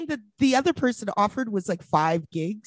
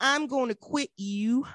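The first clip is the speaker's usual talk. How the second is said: put-on rodeo cowboy accent; 5 dB quieter than usual. Retelling a call to customer service, saying the line in a cowboy accent. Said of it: "Is that what you're doing with that accent?".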